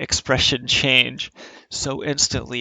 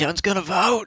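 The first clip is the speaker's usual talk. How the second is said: rowdy, pitched-up yelling; 8 semitones higher than usual. Retelling playing beer pong as Ken Cuccinelli: retelling yelling as Ken Cuccinelli. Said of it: "I'm being Ken Cuccinelli".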